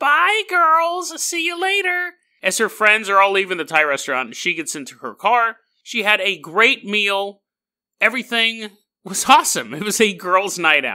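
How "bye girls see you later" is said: put-on very high, drawn-out middle-aged sitcom housewife voice. Acting out a young woman leaving her friends at a Thai restaurant, in a 50-year-old sitcom housewife voice. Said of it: "she sounds like a 50-year-old housewife from a sitcom".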